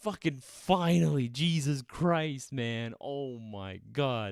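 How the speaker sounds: exasperated, infuriated, fed-up outburst. After a frustrating struggle with settings finally ends: infuriated. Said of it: "That was infuriating".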